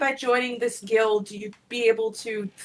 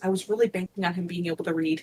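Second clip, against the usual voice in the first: quiet half-whispered voice; 4 semitones lower, 3 dB quieter than usual. Voicing a character who looks back at the group: half-whispering. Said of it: "looks back at the group and whispers".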